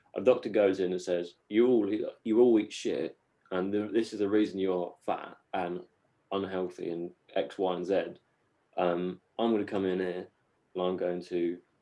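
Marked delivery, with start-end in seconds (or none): none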